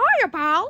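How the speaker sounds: classic cartoon mouse voice. Greeting someone while pretending to be Mickey Mouse: Mickey Mouse voice. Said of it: "It's me, Mickey Mouse".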